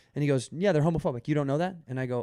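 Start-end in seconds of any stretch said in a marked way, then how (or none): 0.6-1.8 mock, dry, flat, matter-of-fact deadpan tone. Retelling a bartender's answer about a bourbon order: imitating a deadpan bartender. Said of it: "he's so s-, deadpan".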